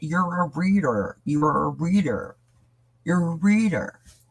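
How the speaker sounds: high, insistent shouting, repeated over and over. Retelling what the chat kept telling them: imitating people yelling.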